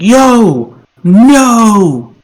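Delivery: high hollering yell, "no" drawn out. A player's character pulls himself onto a roof and starts yelling. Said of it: "start yelling like".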